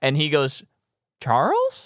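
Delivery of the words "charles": put-on, very high, puzzled, searching voice. Retelling how someone in the theater called out, imitating a confused audience member. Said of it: "they say it like they heard".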